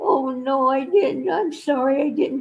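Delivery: put-on sorry, guilty, apologetic cat voice. Retelling coming home to a sick cat: voicing the cat apologizing. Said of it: "he's looking at me like".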